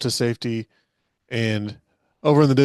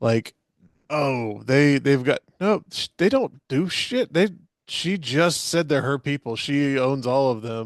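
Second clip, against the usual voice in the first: normal talking voice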